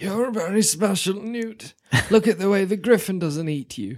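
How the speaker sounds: bad kindly wizard voice that sounds like dark villain. Imagining what Dumbledore says in the film: bad Dumbledore voice. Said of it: "Dumbledore voice is bad".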